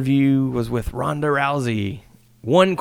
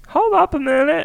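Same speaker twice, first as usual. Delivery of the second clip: very high, shrill, whiny nasal voice; 3 dB louder than usual. Retelling a wrestler's heel promo: imitating a whiny nasal voice. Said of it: "Whiny, nasally".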